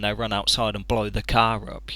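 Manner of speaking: normal talking voice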